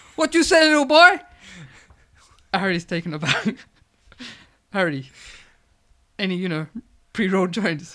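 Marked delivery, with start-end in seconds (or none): 0.2-1.2 put-on very high, very loud Mexican accent. Narrator reads a dealer answering a boy's question, in a mexican accent. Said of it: "for some reason he sounds like a Mexican".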